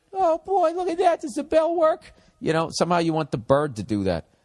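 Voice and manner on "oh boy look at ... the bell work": put-on very high-pitched little-kid voice full of wonder. Picturing a pet bird acting like a little kid: acting like a little kid. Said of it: "want a bird to act like a dog slash a little kid".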